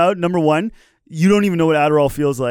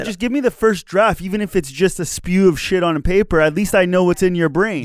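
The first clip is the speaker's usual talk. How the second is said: plain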